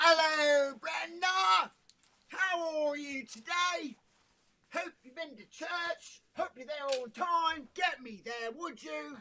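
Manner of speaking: put-on Cockney accent, very high-pitched. Asked for the Cockney accent, greeting someone and chatting: Cockney accent. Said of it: "where's the Cockney accent?".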